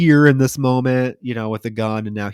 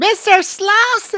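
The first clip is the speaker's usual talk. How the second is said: very high, piercing, shrieking scream; 3 dB louder than usual. Retelling a scene where a character calls a missing man: imitating a scream. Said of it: "screaming 'cause he's not answering her".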